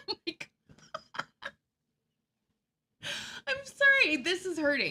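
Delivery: talking through laughter. Reacting to a company's website text, laughing while talking. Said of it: "I should stop laughing".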